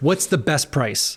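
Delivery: put-on heavy, thick Israeli accent. Imitating the Israeli guys who call asking about price, in a heavy Israeli accent. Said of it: "with the heavy, heavy accent".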